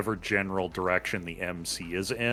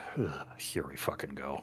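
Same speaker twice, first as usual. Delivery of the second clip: muttering quietly, lower and quieter; 6 semitones lower, 9 dB quieter than usual. Playing a character heading toward a growling sound: muttered under breath. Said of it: "under my breath".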